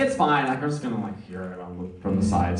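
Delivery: ordinary delivery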